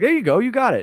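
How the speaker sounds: mock upbeat encouraging cheer, pitched well up. Retelling coaching someone through a jumping puzzle: imitating own encouraging tone. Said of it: "I was encouraging".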